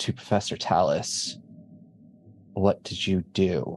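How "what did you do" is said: low, hushed speech. The narrator voices the headmaster speaking to a professor, in hushed tones. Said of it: "saying in hushed tones".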